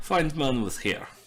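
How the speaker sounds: put-on Russian accent. Voicing a character in the game, switched to a put-on russian accent. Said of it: "He's Russian now".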